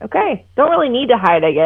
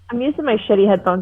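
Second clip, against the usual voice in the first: ordinary talk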